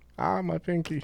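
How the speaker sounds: griping, complaining voice, making a big fuss. Mocking a football player who left limping with a pinky injury: mock complaining as Jay Cutler. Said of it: "you say you have a pinky injury".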